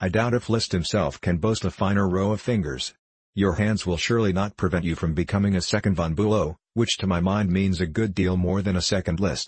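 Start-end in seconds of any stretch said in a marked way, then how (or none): none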